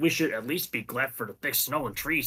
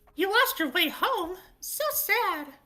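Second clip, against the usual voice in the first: very high, piercing, shrill put-on character voice. Voicing a character met alone in a forest: shrill character voice. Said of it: "I know it's shrill".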